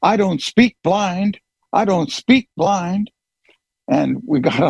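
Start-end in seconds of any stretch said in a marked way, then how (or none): 0.0-3.1 high, full-volume bellowing yell, repeated. Retelling how a guard shoved them outside: imitating a man yelling at top volume. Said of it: "he was yelling at the top of his lungs".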